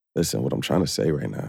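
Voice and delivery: very low, soft, sexy, seductive purr. Asked by another person for a different sexy voice, answering in a sexy voice. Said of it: "Give me a different sexy voice".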